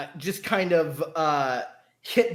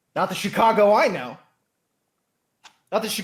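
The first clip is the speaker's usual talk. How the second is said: upset fatherly put-on voice; 3 semitones higher, 4 dB louder than usual. Storyteller voicing Donovan Shaw after a beat of silence, upset dad voice. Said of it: "in like an upset dad voice".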